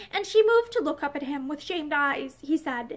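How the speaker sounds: ordinary delivery, nothing marked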